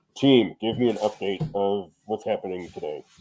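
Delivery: low, electronically disguised voice-box voice. Retelling what he'd say to the team through a voice box: disguised voice-box voice. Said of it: "he would talk into a voice box and he would sound like this".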